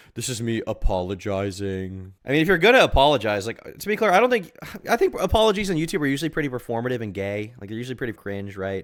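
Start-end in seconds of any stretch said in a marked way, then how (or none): 0.1-2.1 play-acted, very slow, smug, self-satisfied drawl. Repeating another speaker's apology line back: imitating a smug tone. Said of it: "he says it so smugly".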